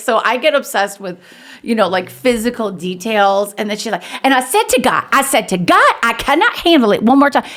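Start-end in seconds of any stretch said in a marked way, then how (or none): 4.2-7.4 put-on voice, pitched up and swooping around. Retelling what she said to God, as a Beth Moore impersonation. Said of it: "there's a Beth Moore impersonation".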